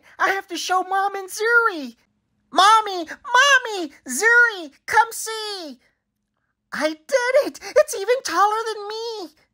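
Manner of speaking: excited, gleeful, very high-pitched voice. A child calls Mom and Zuri to come see, excited and high-pitched. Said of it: "my voice is high-pitched".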